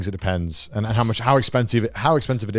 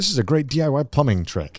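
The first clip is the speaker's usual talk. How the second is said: ordinary delivery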